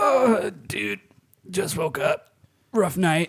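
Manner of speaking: mock sleepy, barely roused, groggy, slow drawl. Imitating the other speaker's text after a missed recording: imitating a friend's groggy just-woke-up voice. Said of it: "I'm imitating what I think the voice was".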